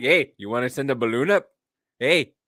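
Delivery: put-on Canadian accent, dropped low. Joking about shooting down balloons: Trailer Park Boys Canadian accent. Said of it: "can't get the Canadian accent out of my head".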